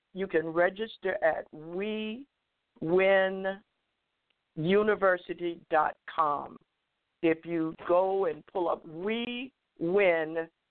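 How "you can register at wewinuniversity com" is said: very slow, much slower pace. Speaker giving the registration website, saying it very slowly. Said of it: "I'm going to say it slowly".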